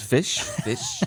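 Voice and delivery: put-on high-pitched, laughing voice like a toddler.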